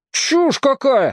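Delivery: shrill, very high, indignant outburst. Reading fiction aloud, Vovochka answers Tom's remark about the tree; indignant outburst. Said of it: "возмутился Вовочка".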